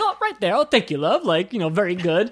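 put-on swooping old-school headmaster voice, older generation. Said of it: "in the most baby boomer way possible".

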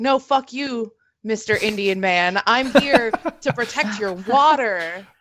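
dug-in, defiant protester voice, spoken slowly. Mocking a protester who refuses to leave: imitating a defiant protester. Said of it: "people that are still there that are like".

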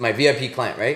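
ordinary delivery

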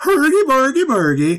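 fake Swedish-like European accent. Imitating a movie Muppet's opening lines: Bjornson's fake Swedish accent. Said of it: "a fake, like, Swedish or, uh, something accent".

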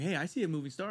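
plain

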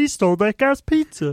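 high frog puppet voice. Performing a line on request as Kermit: Kermit voice. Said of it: "do it as Kermit".

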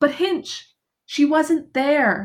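high, drawn-out calling out. Retelling a scene, speaker acts out Miss Murgatroyd calling out after Miss Hinchliffe as she leaves. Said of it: "she's kind of calling out to Miss Hinchliffe".

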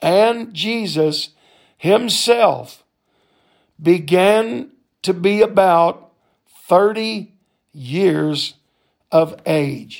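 slow, deliberate, halting reading in broken phrases. Speaker reads a bible verse aloud, reading slowly. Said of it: "I'm going to read it slow".

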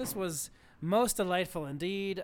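usual speaking voice

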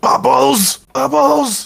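very high, rough, top-of-the-lungs scream. Calling to a hippogriff in the sky: screaming as loud as possible. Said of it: "As loud as I can scream".

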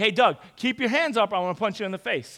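usual speaking voice

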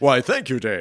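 loud on-air radio announcer voice. Podcast co-host answering a cue to read out listening platforms, in a radio voice. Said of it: "That radio voice, [name], I hear".

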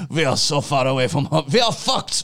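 put-on German accent. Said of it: "you're hearing it's German accent now".

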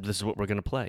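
ordinary delivery

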